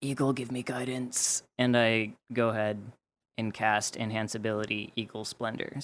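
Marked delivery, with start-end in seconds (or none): 0.0-1.4 muttered quietly under breath. Role-playing a character walking into a room, saying it under breath. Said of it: "I kind of like under my breath say".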